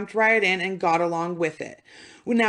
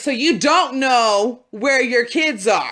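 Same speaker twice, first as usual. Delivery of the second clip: slow, put-on anger suddenly flaring; 3 semitones higher, 4 dB louder than usual. Retelling how the interviewer's voice changed: imitating a suddenly angry voice. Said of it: "his voice changes".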